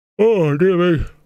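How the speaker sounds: high, yawning sigh, words stretched out. Mid-talk about old data, the speaker breaks off yawning. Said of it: "Excuse me for yawning".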